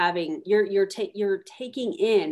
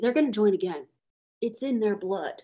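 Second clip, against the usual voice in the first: network marketing speaker voice. Retelling what a network marketing speaker says: Eric Worre impression. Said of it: "I literally just did an impersonation of him".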